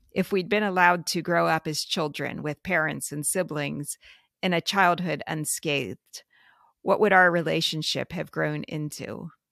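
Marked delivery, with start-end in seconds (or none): none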